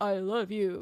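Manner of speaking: put-on flat, emotionless voice. Mocking an actor's line delivery: flat emotionless Hayden Christensen impression. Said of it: "No emotion, talks like this".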